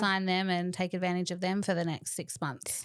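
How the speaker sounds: ordinary delivery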